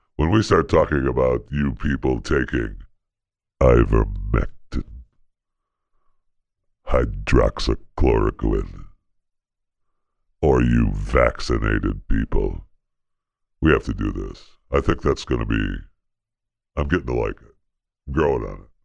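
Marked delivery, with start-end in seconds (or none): 0.2-14.4 acted voice of the devil. Speaker insists COVID talk must be done this way from now on; devil voice. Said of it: "we do COVID talk in the devil voice".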